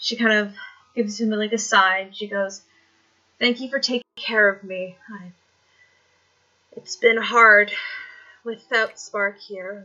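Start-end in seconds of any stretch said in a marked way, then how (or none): 3.4-9.9 frail, shaky, wavering, weak voice. Retelling a scene, the speaker voices a woman thanking a man, imitating a shaky, weak voice. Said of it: "she almost sounds like shaky ... weak in her voice".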